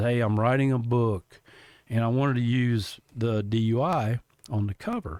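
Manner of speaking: ordinary talk, nothing marked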